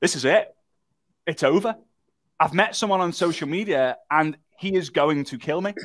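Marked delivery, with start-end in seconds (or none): none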